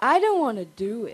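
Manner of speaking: put-on old woman voice. A volunteer on stage is asked to perform, old lady voice. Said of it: "An old lady".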